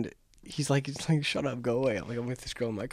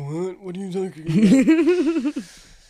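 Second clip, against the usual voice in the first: mock drunk voice, very slow, high, stretched and befuddled; 6 semitones higher, 4 dB louder than usual. Retelling what a very drunk man said to him, imitating a drunk man. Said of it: "he's drunk out of his mind".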